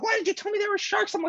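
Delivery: play-acted angry, accusing yell, very high and shrill. Retelling a friend yelling back at the boat: imitating a friend yelling. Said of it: "she yells at me".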